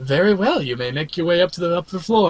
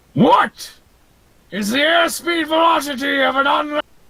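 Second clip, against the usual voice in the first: high, shouted monster voice. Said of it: "real closely and says".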